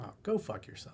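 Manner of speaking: joking, playful, teasing near-whisper. The speaker shows how they swore at someone in jest: completely joking. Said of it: "You do it just like that".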